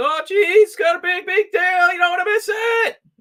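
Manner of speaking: very high cartoon sidekick voice. Imitating another speaker getting excited in an ad: Morty from Rick and Morty voice. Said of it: "he turns a little bit into, like, Morty from Rick and Morty. So he's like".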